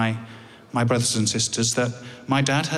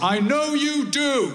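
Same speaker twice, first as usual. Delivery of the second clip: play-acted loud raised voice, pitched very high; 14 semitones higher than usual. Retelling the dad's words as the speaker leaves the hospital ward, loud voice. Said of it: "in a loud voice".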